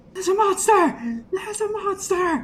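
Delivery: very high, shrill, loud, panicked scream. Game master voices a person coming out of a hallway, screaming. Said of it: "you hear a person come screaming".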